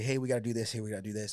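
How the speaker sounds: put-on rushed, hurried speech. Speaker retells how they talked in go mode on the job, imitating rushed go mode. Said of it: "I was just like in go mode".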